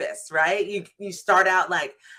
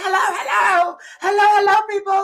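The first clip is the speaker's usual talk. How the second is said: very high-pitched, loud hollering; 12 semitones higher, 5 dB louder than usual. Speaker describing calling out to people, acting out hollering. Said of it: "just hollering".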